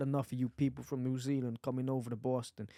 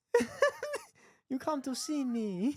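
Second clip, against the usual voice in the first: high, put-on mock Chinese accent. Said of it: "actually a Chinese accent".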